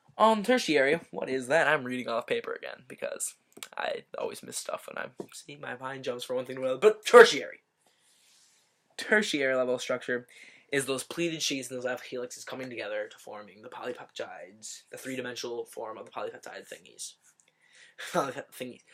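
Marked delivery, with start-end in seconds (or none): 14.9-17.2 fast, rushed speech. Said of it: "I'm talking too fast".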